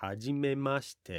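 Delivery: hajimemashite rising, then falling at end. Japanese intonation tip for a first-meeting greeting, rise then fall on hajimemashite. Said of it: "notice this rises and then falls at the end".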